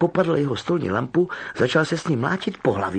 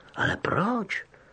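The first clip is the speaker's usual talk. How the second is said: soft, high-pitched, astonished little why; 9 semitones higher, 5 dB quieter than usual. Narrator reading a story; a character asks back after a warning, surprised. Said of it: "Zeptal se Harry překvapeně".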